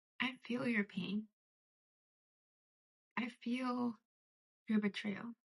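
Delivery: soft, trembling, wavering, shaking voice. Passing on a message from Spirit to a hurting listener, voice shaking. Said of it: "My voice is literally shaking".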